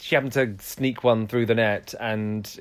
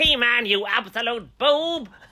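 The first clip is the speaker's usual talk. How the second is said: very high-pitched put-on cartoon villain voice; 13 semitones higher than usual. Doing a requested impression, hurling insults in a Skeletor voice. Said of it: "your impression of, ... The baddie from something. Oh, Skeletor".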